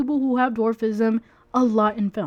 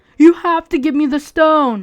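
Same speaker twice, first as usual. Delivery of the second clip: booming, very loud, demanding full-volume yell; 4 semitones higher, 8 dB louder than usual. Imitating a scene where she yells at Pedro Pascal's character: imitating Gal Gadot yelling. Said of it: "she's yelling at Pedro Pascal's character".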